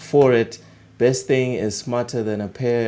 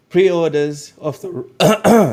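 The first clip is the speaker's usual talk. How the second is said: cracked, breaking voice jumping high; 6 semitones higher, 6 dB louder than usual. Reading out a gaming news item, voice cracking. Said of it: "my voice just cracked there a bit".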